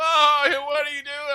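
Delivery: very high, loud taunting jeer. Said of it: "made fun of me".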